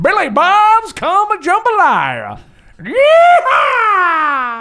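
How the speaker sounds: drawn out, loud and swooping. Signing off the show's episode to listeners in Prospector Pete voice. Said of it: "This is old timey prospector".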